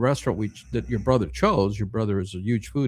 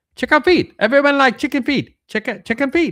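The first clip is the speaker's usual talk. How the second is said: put-on thick Chinese accent, much higher, louder; 9 dB louder than usual. Recounting a story about the owner, the speaker quotes him, imitating a thick Chinese accent. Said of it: "spoke with a very thick accent".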